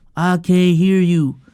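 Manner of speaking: flat, monotone, dead-level delivery with no lift. Mocking a pregame clip of Jason Tatum: flat Jason Tatum monotone. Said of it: "he's very monotone when it comes to um his speech".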